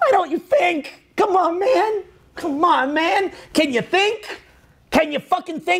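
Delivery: acted, exasperated pleading, very high and drawn out. Acting out the frustration someone feels at people who don't think: imitating someone's frustration. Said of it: "the same frustration that he feels".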